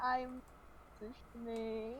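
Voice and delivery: quiet, very soft, slowed, awkward delivery.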